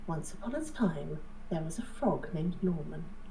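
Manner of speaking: very soft, bedtime-story motherly voice. Showing the voice used reading a bedtime story to a three-year-old: bedtime-story mummy voice. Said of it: "It's my mummy voice".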